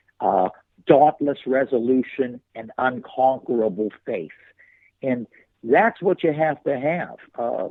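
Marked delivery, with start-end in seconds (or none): none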